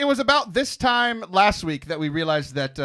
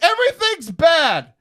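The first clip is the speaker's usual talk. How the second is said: high, loud, despairing cry. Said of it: "And I was like".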